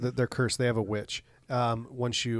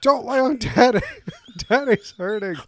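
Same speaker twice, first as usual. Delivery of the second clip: shrill, very loud, high-pitched shouting at full volume; 10 semitones higher, 9 dB louder than usual. Recalling flopping on the floor with cramps, retelling a yell at the kids. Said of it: "I'm just yelling at the kids".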